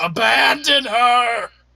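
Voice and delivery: high, undead zombie monster voice. Voicing a zombie shouting at passing characters: zombie shouting. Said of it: "watches as you pass and says".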